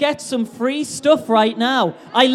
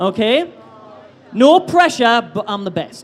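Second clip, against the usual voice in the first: ordinary talk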